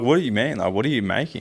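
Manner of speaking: ordinary talk, nothing marked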